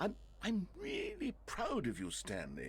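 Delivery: very high, swooping sarcasm with fake sincerity. Telling stanley before his speech that you're proud of him: sarcastic. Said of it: "you can't say those words so sarcastically to me".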